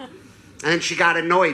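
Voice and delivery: ordinary talk, nothing marked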